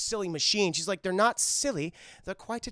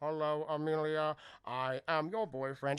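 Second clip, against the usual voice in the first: mock robot voice, quieter; 2 semitones lower, 5 dB quieter than usual. Retelling a scene where a character stands up and speaks: robot voice. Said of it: "he starts doing a robot voice".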